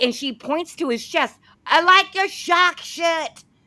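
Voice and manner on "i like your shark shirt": put-on high, slow Australian accent. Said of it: "that's my Australian".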